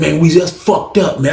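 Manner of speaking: ordinary talk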